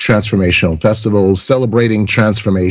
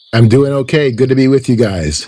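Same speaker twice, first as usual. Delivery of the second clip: sounding a little ill, under the weather; 4 semitones higher than usual. A returning guest greets the hosts on the show, sick voice. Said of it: "you're a little sick".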